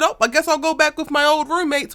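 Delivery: self-pitying whine. Speaker quotes a man who couldn't sleep on another man's couch, mock woe-is-me whine. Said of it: "woe is me".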